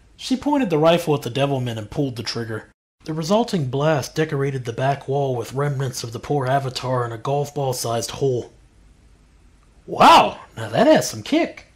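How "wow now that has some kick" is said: very loud, high, thrilled, gleeful outburst. A narrator reads her line after she fires the rifle, said with a large grin.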